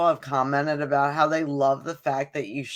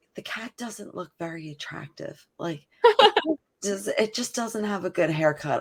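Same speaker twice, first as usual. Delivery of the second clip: mock whisper, higher; 4 semitones higher than usual. Retelling what a friend's aunt said to them: imitating a whisper. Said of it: "She's, like, whispering to me".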